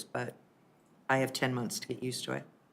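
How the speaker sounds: teary voice, speaking through tears. Explaining to the council who she chose and why, tearful. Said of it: "I apologize for the tears".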